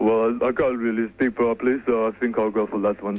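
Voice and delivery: put-on Russian-sounding voice. Caller asked by the host for more of the voice, Sly voice sounding Russian. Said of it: "Sounds Russian".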